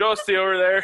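put-on Canadian accent. Showing how names sound in a canadian accent, repeat the phrase in a canadian accent. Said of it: "with like a Canadian accent".

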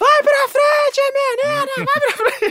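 exasperated, impatient shouting, shrill and pitched way up. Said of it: "e a [name] começa a gritar".

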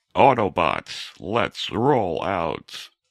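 very deep, dropped-down robot voice. Showing the other host a voice they can do, Optimus Prime voice. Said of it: "is that the alien from your show?".

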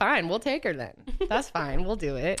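ordinary delivery

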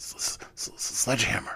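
stammering. A figure facing the narrator's pistol answers his demand, stammering. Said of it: "stammered the figure".

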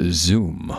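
clicky, clicked-out one-word delivery. Trying again with a clicky voice: clicky-voiced David Caruso impression. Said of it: "still the world's worst David Caruso".

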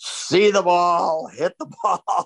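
put-on drunken, bellowing voice. Act out Jimmy being pushed into his room at 2 a.m., retelling a man's bellowing. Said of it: "bellowing out".

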